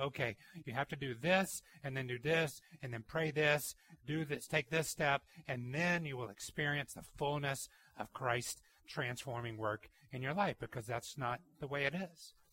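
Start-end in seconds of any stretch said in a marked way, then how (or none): none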